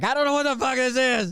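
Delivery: put-on, very high, desperate, panicked cry. Describing a panicking man's voice, imitating his desperate voice. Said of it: "The desperation in his voice where he's like".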